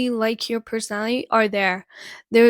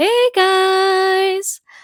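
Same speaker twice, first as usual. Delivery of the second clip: bright, peppy, pitched-up voice, "guys" stretched out; 9 semitones higher, 4 dB louder than usual. Retelling how she greets coworkers at the store: imitating her own peppy hello. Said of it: "give a little peppy hello to everyone".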